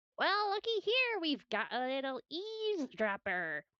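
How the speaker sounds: sly, high, very weaselly goon voice. Voicing a figure who grabs an eavesdropper: very weaselly voice. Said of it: "a very weaselly, uh, voice".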